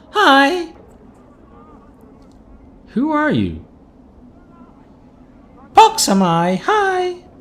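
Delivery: put-on very high, slow, girlish little-girl voice. A man finally responds after a moment of silence, in Pox's high little-girl voice. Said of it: "responds in a high pitched voice that sounds more suited to a girl of ten years".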